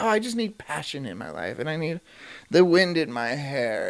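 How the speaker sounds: derisive, mocking put-on parody voice. Ranting about a wife from a TV show: imitating Kim. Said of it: "And she's all like".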